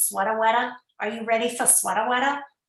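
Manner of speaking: fast, put-on, sketch-comedy New Jersey accent. Describing a gif they post to make people laugh, in a new jersey accent. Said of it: "that kind of the New Jersey accent".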